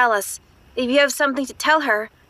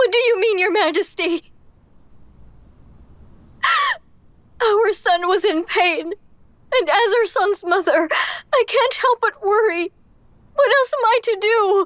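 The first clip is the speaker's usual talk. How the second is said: crying, much higher; 9 semitones higher than usual. A mother answers His Majesty, who threatens to leave over her crying; crying. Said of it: "if you keep crying like this".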